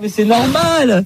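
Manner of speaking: mock soothing, high, slow cooing voice.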